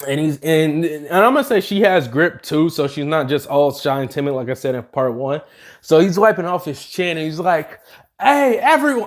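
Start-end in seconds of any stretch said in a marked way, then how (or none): 8.2-9.1 pitched-up voice cracking partway through. Narrating a character calling out to everyone, voice cracking. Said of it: "Ah, fuck, voice crack".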